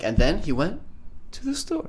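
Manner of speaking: high voice fading away to nothing. Mocking the other speaker's joke delivery back at him, imitate trailing off. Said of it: "You gotta not trail off at the end of your joke".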